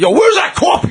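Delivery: put-on shrill, very high-pitched scream. Imitating a newspaper editor demanding coffee: imitating an editor screaming. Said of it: "just screaming".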